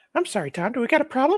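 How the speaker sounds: squeaky voice pushed way up high. Speaking to Tom, one speaker puts on a Mickey Mouse voice. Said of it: "Don't ever do a Mickey Mouse voice to me".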